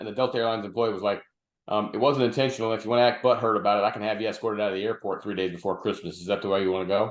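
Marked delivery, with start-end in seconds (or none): none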